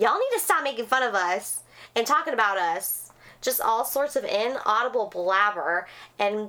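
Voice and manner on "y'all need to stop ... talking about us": ordinary delivery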